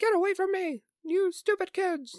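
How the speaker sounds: very high, loud put-on old man voice. Retelling a scene where Judy tries to help him, put-on old man voice. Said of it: "Whenever you do the old man voice".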